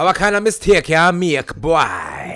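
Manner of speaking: put-on Jamaican accent. Retelling how a lady scolded you about the laundry, say this imitating a Jamaican accent. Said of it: "One of two Jamaican ladies".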